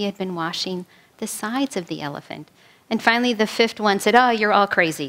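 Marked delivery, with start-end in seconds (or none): none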